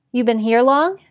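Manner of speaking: ordinary delivery, nothing marked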